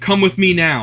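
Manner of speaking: halting broken English. Retelling how a man standing over them ordered them along, imitating broken english. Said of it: "speaks broken English".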